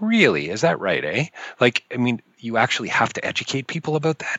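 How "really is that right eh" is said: dry, sarcastic jab. Retelling a remark made to his wife about a billboard: retelling a sarcastic remark. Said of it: "sarcastically turned to Elizabeth and said".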